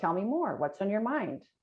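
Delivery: curious, inquisitive tone. Explaining types of tones, the speaker demonstrates the second one: curious tone. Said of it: "So curious".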